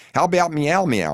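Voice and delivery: very high, squeaky voice like helium. Narrator reads a man on helium quizzing the narrator, Alvin the Chipmunk voice. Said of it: "in the exact Alvin the Chipmunk tone".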